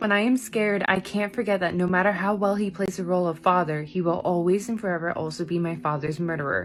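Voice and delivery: ordinary talk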